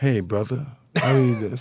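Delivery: mild, easy, mellow delivery. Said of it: "Sway's such a mild, mellow".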